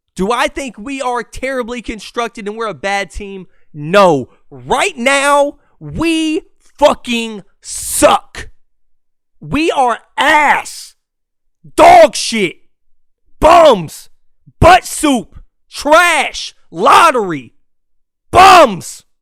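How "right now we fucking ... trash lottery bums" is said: screaming, yelling, higher and louder. Ranting that the team is bad right now: screaming. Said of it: "I am screaming right now".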